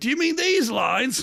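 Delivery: hard sniffs, then a high-pitched voice. Acting out a film scene as Dennis Hopper: Dennis Hopper impression sniffing cocaine. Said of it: "an impression of Dennis Hopper sniffing cocaine".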